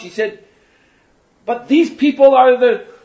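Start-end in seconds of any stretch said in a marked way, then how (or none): 1.4-2.8 loud, high-pitched shouting. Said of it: "she shouted out".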